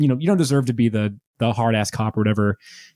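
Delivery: normal talking voice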